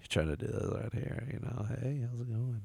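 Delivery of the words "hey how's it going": put-on hushed, very quiet talking. Retelling how a friend talked to a girl on the phone: imitating someone talking real quiet. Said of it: "real quiet".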